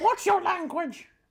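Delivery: very high, scolding, telling-off tone. Retelling a scolding from mum over a rude phrase: imitating mum telling off. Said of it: "Good impression there".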